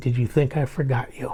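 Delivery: soft, hushed whisper. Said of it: "he whispers in my ear".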